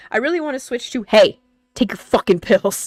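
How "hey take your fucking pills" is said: mock forceful commanding tone, louder. Showing a bolder way to remind viewers about pills: put-on forceful tone. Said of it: "Something a little more, um, mm, forceful".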